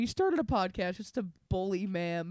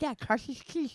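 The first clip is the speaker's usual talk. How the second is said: innocent tone, higher and quieter; 6 semitones higher, 4 dB quieter than usual. Retelling a mother's reply to a joke: imitating someone saying it innocently. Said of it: "kept making her say it so innocently".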